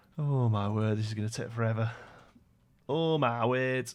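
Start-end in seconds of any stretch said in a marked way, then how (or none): 2.9-3.9 really northern-sounding English accent. Facing a task that will take forever, slipping into a northern english accent. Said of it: "I sounded really northern then".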